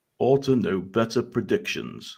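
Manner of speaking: deep, slow voice dropped an octave. Repeating the impression an octave lower as asked: deeper impression of Daniel. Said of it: "Try it a bit deeper".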